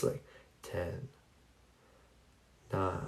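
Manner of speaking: very hushed, slow, even, rhythmic whisper. Showing how to count down for relaxation, slow rhythmic counting. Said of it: "in a slow rhythmic voice".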